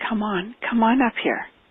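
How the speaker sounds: very gentle, soft, kindly, beckoning voice. Recounting what a soft spiritual being said, retelling a very gentle voice. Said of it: "it was a very gentle voice".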